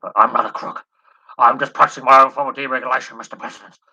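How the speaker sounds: very loud, booming, speech-like delivery. Doing an impression of Richard Nixon denying being a crook: Richard Nixon impression. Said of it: "I don't wanna do my Nixon".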